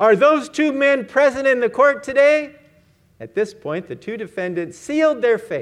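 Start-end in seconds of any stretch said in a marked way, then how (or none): 0.0-2.6 booming, raised, demanding voice. Retelling a courtroom exchange, the prosecutor questions the witness: booming voice. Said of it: "the prosecutor boomed".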